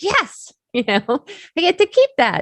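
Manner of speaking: thrilled reaction. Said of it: "I was like".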